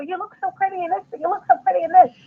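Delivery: mock controlling voice, high and fast.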